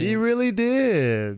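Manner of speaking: squeaky put-on cat voice, very high, drawn out. Answering a co-speaker in a cat voice. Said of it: "In my cat voice".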